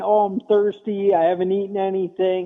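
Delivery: put-on cranky, whining kid voice. Imitating kids stuck for hours in a stranded car: imitating whiny kids. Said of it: "You got your whiny kids, you know, whining".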